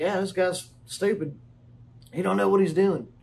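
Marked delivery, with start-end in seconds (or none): none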